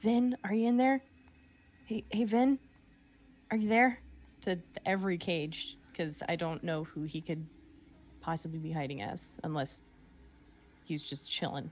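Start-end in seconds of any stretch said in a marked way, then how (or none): 0.0-4.0 whispered, higher. Sneaking up to cages in the game, calling a name: whispering.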